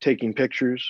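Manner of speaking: ordinary delivery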